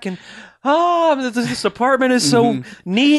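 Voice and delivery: put-on happy innocence. Imitating a character who plays happy innocence: imitating happy innocence. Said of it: "happy innocence with this character".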